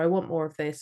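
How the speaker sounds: ordinary talk, nothing marked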